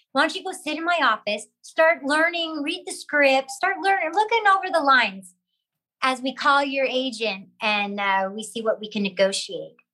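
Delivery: ordinary delivery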